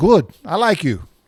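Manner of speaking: put-on Italian accent. Retelling what the grandfather said at their meeting, in a heavy Italian accent. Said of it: "he just says in that heavy Italian accent".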